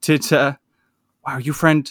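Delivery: hushed whisper. Game master voicing a character during a tabletop game: whispering. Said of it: "kind of whispers again".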